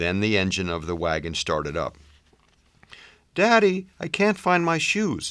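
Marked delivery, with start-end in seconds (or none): 3.3-5.3 calling out, pitched very high, carrying. Melissa calls out to her daddy from the wagon, calling out. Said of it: "Melissa called out".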